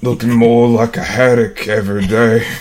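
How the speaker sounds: put-on distinct grandpa character voice. Rereading a comic's Grandpa line after being asked: different voice for Grandpa. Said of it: "you gotta do a different voice so people know".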